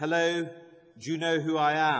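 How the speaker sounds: loud, slow, condescending, talking-down shout. Retelling greeting an elderly lady in an old people's home: imitating own patronizing shout. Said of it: "in a rather patronizing tone, uh, shouted in her ear".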